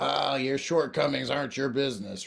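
put-on grizzled old-timer voice. Imitating what old-time sponsors tell you, in a grizzled voice. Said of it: "in a grizzled voice".

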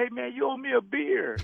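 put-on friendly holler. Recalling jumping up among the fans, retelling how a fan yelled at him. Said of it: "he kind of yelled at me".

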